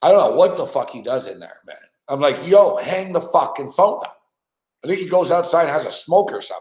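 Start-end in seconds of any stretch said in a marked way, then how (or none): 2.5-4.2 acted-out, put-on yelling. Retelling telling someone on a call to hang up, retelling own yell. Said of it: "I'm yelling into the mic".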